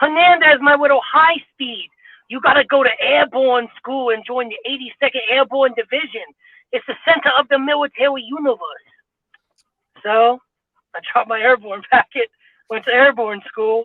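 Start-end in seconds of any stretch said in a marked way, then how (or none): 0.0-8.9 New York sergeant voice with speech impediment. Retelling what a platoon sergeant used to say, imitating Chingolini's New York accent. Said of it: "He had a um a speech impediment with New York accent".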